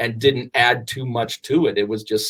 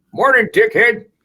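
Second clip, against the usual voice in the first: put-on very high, crabby, grumpy old man voice; 10 semitones higher, 4 dB louder than usual. Trying out a grumpy old man voice from the movies: grumpy old man voice. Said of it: "let me see if I can do the grumpy old man".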